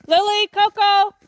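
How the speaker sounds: very high, loud shout. The speaker breaks off mid-talk to call the dogs by name, yelling. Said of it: "Sorry for the yelling".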